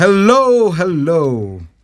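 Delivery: festive, high, jolly ho-ho-ho style voice. Opening greeting, surprised at how they sound: sounding like Santa Claus. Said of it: "Sound like Santa Claus".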